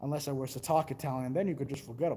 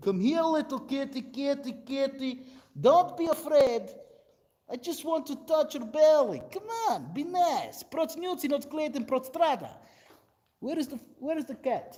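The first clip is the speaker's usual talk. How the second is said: very high, coaxing, put-on Russian accent; 12 semitones higher, 5 dB louder than usual. Retelling how a Russian friend called for the cat: imitating a Russian friend. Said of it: "the way he said it was so perfect".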